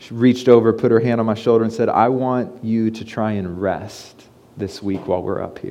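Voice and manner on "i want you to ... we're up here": very quietly spoken, slow murmur. Quoting her words while the kids sleep in the car, said very quietly. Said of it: "she said very quietly to me".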